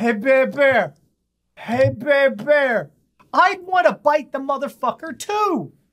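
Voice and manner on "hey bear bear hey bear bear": put-on tipsy, drunken, goading call. Picturing two drunks coming up to a bear at night, imitating drunk idiots calling. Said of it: "two drunk idiots come up and start going".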